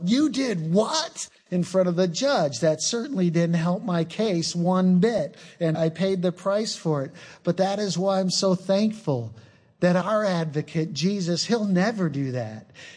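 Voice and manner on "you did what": high, slow yell. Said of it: "turns to me and yells out".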